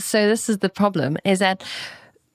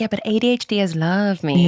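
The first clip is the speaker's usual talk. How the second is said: ordinary talk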